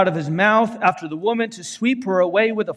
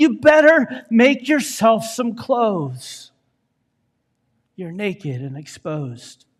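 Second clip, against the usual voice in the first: put-on whisper with an accusing tone. Voicing Satan accusing the children of God after temptation: Satan whispering. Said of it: "then he whispers".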